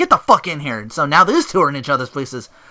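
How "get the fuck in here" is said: mock furious, super angry, loud delivery. Retelling a wrestler tagging in his partner: super angry tag-in. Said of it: "super angry".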